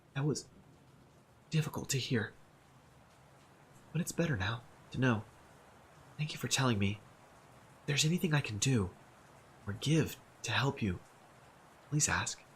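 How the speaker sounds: unsteady, trembling, quavering voice. A narrator reads a woman's words as she sits on the cot's edge, in a trembling voice. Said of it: "she says in a trembling voice".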